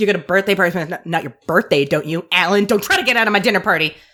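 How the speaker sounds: play-acted, sassy delivery full of attitude. Retelling Sherry inviting Alan to a dinner party: sassy Sherry voice. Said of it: "she says it with some sass".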